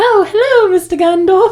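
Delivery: very high, tiny, small-sounding voice. Answering a request from another speaker to do a voice, Frodo voice. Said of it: "Do a Frodo voice".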